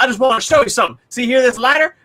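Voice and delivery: hillbilly drawl. Retelling a funny TikTok video: imitating a hillbilly TikToker. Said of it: "he's a hillbilly on TikTok".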